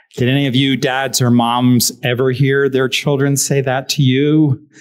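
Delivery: plain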